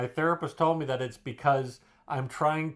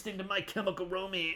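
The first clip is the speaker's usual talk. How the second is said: mocking emo kid voice, higher and quieter; 6 semitones higher, 7 dB quieter than usual. Teasing another speaker about being an emo kid: mocking emo kid voice. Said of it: "You were like an emo kid".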